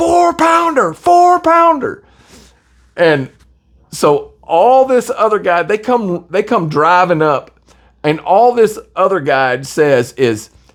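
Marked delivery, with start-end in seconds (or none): 0.0-2.0 play-acted, shrill, repeated, very high shouted holler. Retelling how Alex answered about the fish's weight: imitating Alex yelling. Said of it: "And Alex is yelling".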